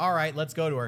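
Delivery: normal talking voice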